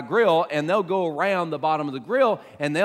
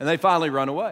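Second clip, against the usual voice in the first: ordinary talk, nothing marked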